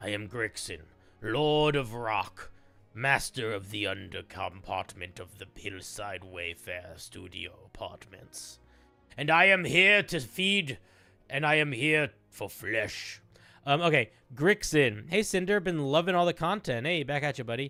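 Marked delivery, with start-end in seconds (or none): 0.0-13.2 deep, low, slow evil troll voice. Introducing the character Grixin for the first time: Grixin evil troll voice. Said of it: "You sound like an evil troll".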